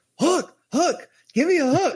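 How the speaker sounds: shrill, very high, urgent yelling. Retelling hearing Rob call for a hook while parking: imitating Rob yelling. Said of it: "I hear Rob yelling".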